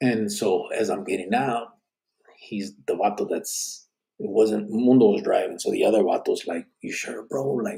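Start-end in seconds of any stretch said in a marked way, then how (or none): 6.8-7.5 muttering under breath, quieter. Retelling what the other guy in the car asked: imitating muttering under his breath. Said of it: "talking to me kinda, like, under his breath".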